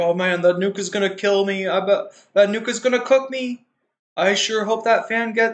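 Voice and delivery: big, animated cartoon-bear character voice. Voicing another person's imagined thoughts about the fire, Yogi Bear voice. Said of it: "why am I making Hassan sound like Yogi Bear?".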